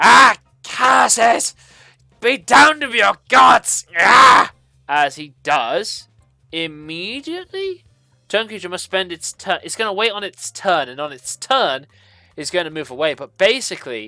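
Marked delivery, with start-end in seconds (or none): 0.0-4.5 very loud, rasping, creaky, drawn-out devil voice. Voicing a turned spined devil cursing the heroes' gods: cursing devil voice. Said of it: "you just hear this creature kinda going".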